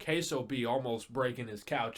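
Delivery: ordinary talk, nothing marked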